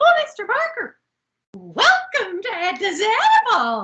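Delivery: high, loud, gushing, sing-song excited voice. Retelling a show scene where a shop owner greets a visitor: imitating excited Missus Garrett. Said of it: "She's so excited to see him".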